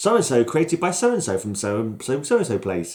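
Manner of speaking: ordinary talk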